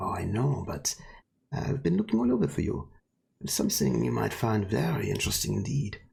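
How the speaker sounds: close put-on character voice. Voicing a figure who speaks close to a player's ear: Sigmund's voice. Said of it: "And the voice says".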